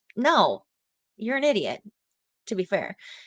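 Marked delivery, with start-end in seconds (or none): none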